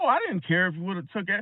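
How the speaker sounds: ordinary talk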